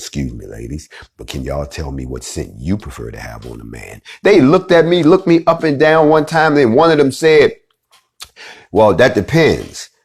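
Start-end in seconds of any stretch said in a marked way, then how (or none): 0.0-4.0 very low, soft, deep, hushed radio DJ voice. Walking up to a group of women at a counter, in a dj voice. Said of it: "I had to put on my D J voice".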